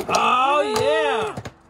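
high, loud, excited yell. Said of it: "I keep yelling".

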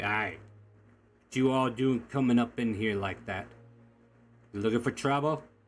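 put-on orc character voice. Game narrator voicing an orc speaking from his seat to the group coming in, orc voice. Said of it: "you hear a orc out of his seat say".

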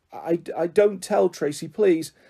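pleading. Peter, caught out by tracy after wetting himself, begging. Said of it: "Peter begged".

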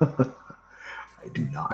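breathy, hushed, whispered monster voice, villain-like. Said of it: "He was like".

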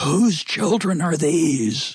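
put-on high, slow, scolding scream. Retelling how a stranger on the beach reprimanded the children: imitating a stranger screaming. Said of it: "and screamed".

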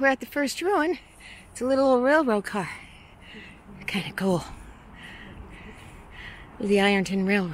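winded, huffing and panting. Walking up to an old railroad car ruin, narrating: out of breath, huffing. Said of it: "Sorry for huffing and puffing".

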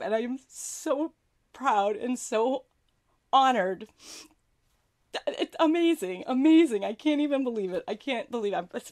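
crying, tears breaking through the words. Thanking the audience after receiving five awards, crying. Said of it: "I promised I'm not going to cry, but I can't help it".

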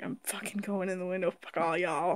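very hushed, irritated, grumbling pet voice. Voicing a pet's thoughts as it flees: voicing an annoyed pet. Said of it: "Pemba's like".

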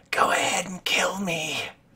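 very high-pitched, defiant, taunting creature voice. Voicing a glaring creature with a blade at its throat: glaring creature daring attack. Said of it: "it glares at you and goes".

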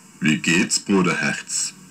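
deep, low chimpanzee-like ape voice. Narrating a story, a chimpanzee greets a zoo visitor in a deep ape voice. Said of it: "sprach mit tiefer Stimme".

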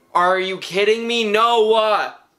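loud, high-pitched, furious angry outburst. Reacting as noah gets bit too, so mad. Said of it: "I'm actually so mad right now".

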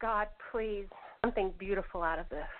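put-on whisper. Retelling a prayer said when hardly able to speak: retelling a whisper. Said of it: "so I whispered".

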